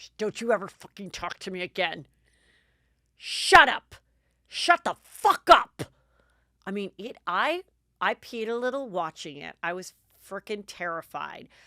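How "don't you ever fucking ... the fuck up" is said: play-acted savage, vicious, very loud shouted tirade. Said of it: "when she is, like, vicious, it gets really deep".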